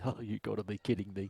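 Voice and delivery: muttering quietly to himself. Game master narrating a character's reaction, muttered under breath. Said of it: "mutter under his breath".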